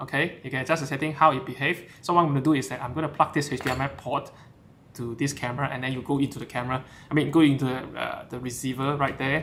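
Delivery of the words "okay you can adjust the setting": fast, rattled-off, rushed speech. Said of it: "if I'm speaking too fast".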